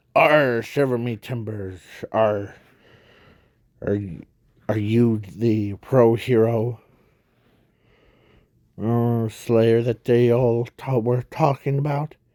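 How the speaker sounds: put-on storybook pirate villain voice, arr and all. Retelling a show's scene, quoting the pirate villain: imitating a pirate villain. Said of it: "the pirate guy or villain says".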